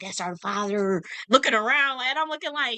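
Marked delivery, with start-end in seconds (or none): 0.0-1.0 whispering. Retelling how people in Burkina Faso spoke of their leader: imitating people whispering. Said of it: "be whispering it, like".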